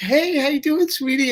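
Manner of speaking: put-on very high little baby voice. Retelling greeting a thirteen-year-old girl at Disney World, in a baby voice. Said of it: "I did a little baby kind of voice".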